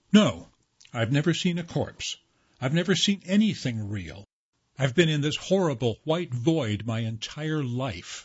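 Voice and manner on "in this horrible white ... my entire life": plain reading voice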